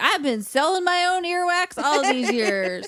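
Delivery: odd put-on Southern drawl, high and slow. Joking about what Woody would say: weird Southern accent. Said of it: "a weird Southern accent right now when I'm talking about them".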